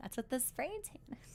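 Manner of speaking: quiet, sly whispering.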